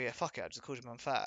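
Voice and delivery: ordinary talk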